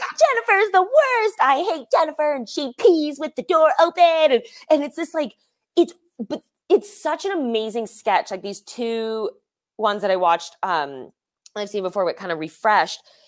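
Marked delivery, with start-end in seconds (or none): 0.0-4.4 put-on child voice, much higher. Describing a favorite comedy sketch, doing the Judy Miller kid voice. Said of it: "she plays a kid".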